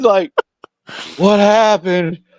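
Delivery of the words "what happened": play-acted weepy child voice, high, tearful, bewildered. Retelling how a kid who had been hit asked what happened: imitating a crying kid. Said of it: "And he's crying".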